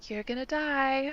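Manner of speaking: soft half-whisper, under the breath. Retelling walking invisibly past the boys: retold half-whisper. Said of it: "just like whispering in the air".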